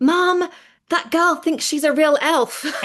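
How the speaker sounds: put-on very high, full-volume acted-out kid's yell. Recalling a boy running off to shout to his mom, retelling his yell. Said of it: "yelled at the top of his voice".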